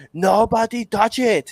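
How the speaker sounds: put-on Austrian accent way up high. Quoting someone who sounded like Arnold Schwarzenegger: Arnold Schwarzenegger voice. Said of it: "he sounded like Arnold Schwarzenegger. He'd be like".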